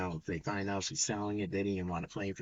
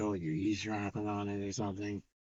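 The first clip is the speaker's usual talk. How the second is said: ordinary delivery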